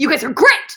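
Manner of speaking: loud, fake-aggressive, combative delivery. Having apologized for sounding aggressive, address the guys mock-combative. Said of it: "Now I'm just going to make everything combative".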